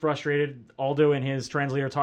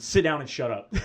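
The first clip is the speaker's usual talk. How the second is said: ordinary talk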